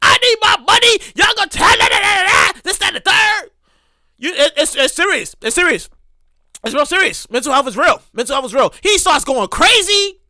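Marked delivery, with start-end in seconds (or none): 0.0-3.5 high, enraged, furious ranting. Retelling a disgruntled guy demanding his money at reception: imitating an enraged man. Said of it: "He's on a hundred".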